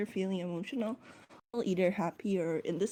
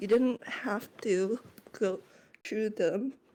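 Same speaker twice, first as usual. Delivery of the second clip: composed voice, breaking and cracking. Voicing a character facing his captor: voice cracking while keeping composure. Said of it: "there's a very noticeable crack in his voice as he goes".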